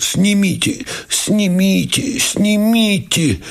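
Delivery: very high-pitched, pained groan. Reading a novel, Myshlayevsky collapses in pain and moans the words. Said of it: "простонал".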